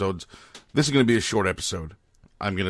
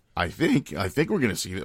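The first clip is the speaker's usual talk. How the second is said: voice cracking and breaking; 3 semitones lower than usual. Speaker talking about a TV series, voice cracking. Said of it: "My voice is cracked again".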